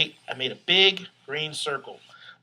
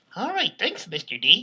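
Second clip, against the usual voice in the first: ventriloquist dummy puppet voice; 3 semitones higher than usual. Voicing the puppet thanking Mister D: Dorsey puppet voice. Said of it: "I am a ventriloquist".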